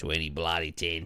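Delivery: attempted put-on Australian accent. Starting a story they promised to tell, the speaker tries an Australian accent. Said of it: "Is that Australian?".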